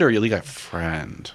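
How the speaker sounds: insinuating stress on friend. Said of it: "What are you insinuating?".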